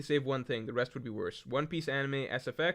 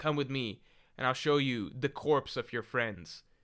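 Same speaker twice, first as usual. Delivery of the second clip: put-on serious tone. Retelling a scene where Wanda leads the crew, mock-serious Wanda line. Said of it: "like in a very serious tone".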